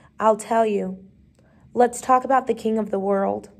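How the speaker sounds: plain reading voice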